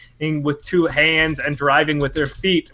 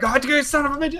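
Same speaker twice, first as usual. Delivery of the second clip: furious, angry, pitched-up voice; 10 semitones higher than usual. Retelling a mother's angry words while driving: imitating an angry driver. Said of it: "she gets real angry driving".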